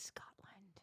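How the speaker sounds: hushed, mock-secretive whisper. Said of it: "I'm just whispering".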